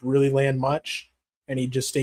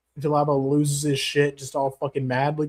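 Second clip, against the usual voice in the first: ordinary delivery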